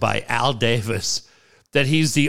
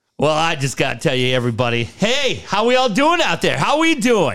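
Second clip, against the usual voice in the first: overly cheery, swooping, sing-song voice; 4 semitones higher than usual. Imitating Nathaniel Hackett at the podium: overly cheery. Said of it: "Calm down".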